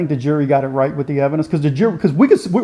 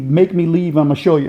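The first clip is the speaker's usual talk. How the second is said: usual speaking voice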